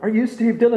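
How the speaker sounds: high, excited, eager tone.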